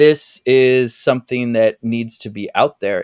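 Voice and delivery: ordinary talk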